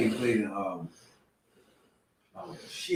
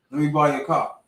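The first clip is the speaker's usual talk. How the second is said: plain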